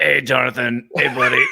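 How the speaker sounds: put-on hint of New York accent. Acting out a coworker greeting the boss: imitating Craig with New York accent. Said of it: "a hint of a New York accent in Craig".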